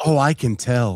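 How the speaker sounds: ordinary talk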